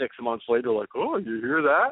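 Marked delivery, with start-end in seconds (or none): 0.9-1.9 mocking, feigned clueless innocence. Retelling how someone acted unaware months later: imitating someone playing dumb. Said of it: "played dumb".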